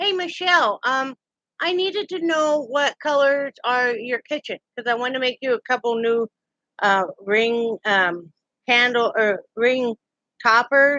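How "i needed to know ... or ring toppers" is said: anxious, halting speech full of fillers. Speaking directly to Michelle right after greeting her, sounding nervous. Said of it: "Sorry, I'm nervous".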